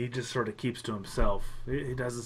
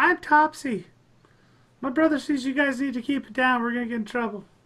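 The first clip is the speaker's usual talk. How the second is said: high, piping gnome voice, louder; 13 semitones higher, 6 dB louder than usual. Topsy pipes up after a male gnome mutters darkly: high-pitched Topsy voice. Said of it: "all of a sudden you hear a high pitched voice".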